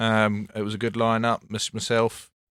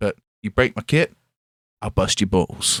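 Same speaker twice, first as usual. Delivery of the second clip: put-on American accent. Retelling a man's reply when asked to borrow his kit, in an American accent. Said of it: "an American accent".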